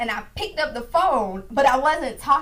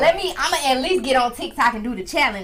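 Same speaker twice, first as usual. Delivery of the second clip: normal talking voice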